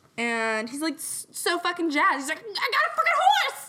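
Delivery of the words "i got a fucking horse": very high, loud, pubescent cracking voice. Retelling what he said on opening the castle, imitating a puberty voice crack. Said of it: "that was his voice, like, cracking because of puberty".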